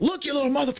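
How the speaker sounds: angry outburst. Retelling a prison quarrel over the election: imitating a man going off angrily. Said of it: "he just went off".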